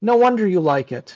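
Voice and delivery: mock-deadpan delivery. Retelling what she said after he explained a game rule, retelling a deadpan remark. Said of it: "She looked me in the eye in a deadpan tone and said".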